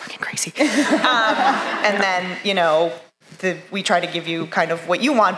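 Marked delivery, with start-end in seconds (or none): 0.0-0.5 whispering, much quieter than normal. Addressing the fan community, dropping in a whispered aside.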